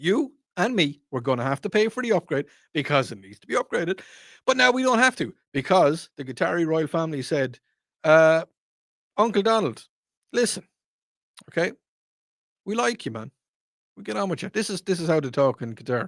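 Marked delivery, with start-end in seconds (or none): 9.2-14.5 higher-pitched put-on Irish accent. Quoting the Qatari royal family talking to Uncle Donald, Irish-sounding accent. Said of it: "it sounds sounds very Irish".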